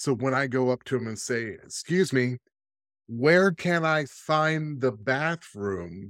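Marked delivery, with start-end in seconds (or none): 1.6-6.1 slow, drawn-out, mild put-on yell. Acting out asking a local where the bathroom is: pretend yelling. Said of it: "why are you yelling at me?".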